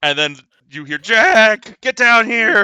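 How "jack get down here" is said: put-on very loud drunken bellow, one word stretched out. Voicing a drunken relative yelling for Jack to come down: drunken yelling. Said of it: "you hear drunken, like, yelling for your name".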